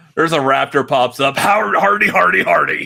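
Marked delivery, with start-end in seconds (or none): 1.4-2.9 rough voice talked out of the corner of the mouth. Imitating another speaker's Venom voice, talking out of the side of the mouth. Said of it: "I talk out of the side of my mouth".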